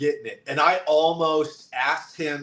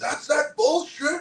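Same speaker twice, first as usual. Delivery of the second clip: shrill, very high, mild half-yell; 12 semitones higher than usual. Retelling holding something up in a clip: imitating own yell. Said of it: "hold it up and yell".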